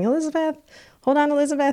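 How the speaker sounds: put-on high-pitched, called-out yell. Retelling being pushed off a metro train, imitating her dad yelling. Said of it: "he's yelling".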